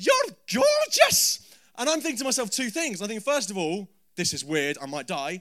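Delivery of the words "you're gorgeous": very high, full-voiced shout at the top of the voice. Telling how a woman locked eyes with the speaker, retelling her shout at top of voice. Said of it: "at the top of her voice".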